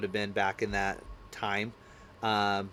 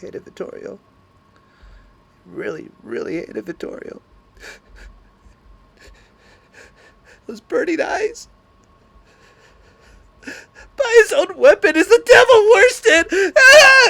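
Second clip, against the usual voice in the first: mock very high, very loud, swooping, frantic freaking-out voice; 18 dB louder than usual. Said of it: "And she starts freaking".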